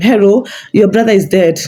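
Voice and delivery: normal talking voice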